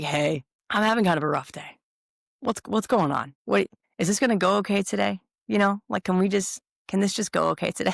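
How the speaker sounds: worn-down, resigned, weary and defeated tone. Retelling walking in to see someone on a rough day: imitating a defeated tone. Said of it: "I'll walk in with a defeated look on my face and be like".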